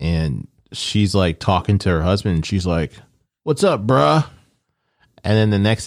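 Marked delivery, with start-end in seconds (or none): 3.4-4.2 casual dude-bro voice, pitched up. Retelling a movie scene where a wife greets her husband: imitating a woman talking like a dude. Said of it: "talking like a dude".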